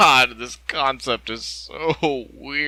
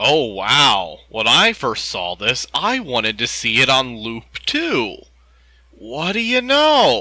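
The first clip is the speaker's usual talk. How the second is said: openly sarcastic, swooping sing-song delivery. Reacting to an image on screen: sarcastic. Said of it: "I'm being sarcastic".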